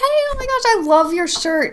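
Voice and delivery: very high-pitched put-on voice. Recalling walking up to someone and starting a chat: high-pitched voice. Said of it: "I would do the high pitched voice thing".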